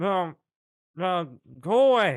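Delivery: tiny squeaky voice. Someone knocks on the front door, and a voice answers: small squeaky voice. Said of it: "you hear in a a small squeaky voice".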